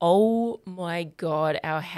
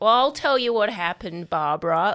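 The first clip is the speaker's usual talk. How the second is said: loud yelling, calling out; 2 semitones higher than usual. Retelling what the neighbor yelled to a parent: imitating someone yelling. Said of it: "Steve just yelled out".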